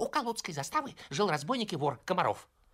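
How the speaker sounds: put-on very high, rushed, hoarse boy's voice. A boy jumping in front of the narrator tells a story, hoarse and hurried. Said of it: "торопливо рассказывал хриплым голосом".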